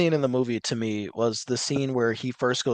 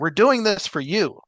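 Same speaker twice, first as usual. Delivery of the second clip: mock manic woman voice, higher pitch; 7 semitones higher, 3 dB louder than usual. Retelling what a woman said to a crowd at a protest: imitating a manic woman. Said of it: "she was being manic".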